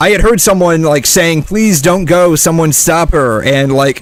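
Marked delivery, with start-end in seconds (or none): 1.4-3.4 mock-sarcastic pleading tone, pitched higher. Recalling early ER days, the speaker quotes a woman there: mock-sarcastic plea. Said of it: "said in like a very sarcastic manner".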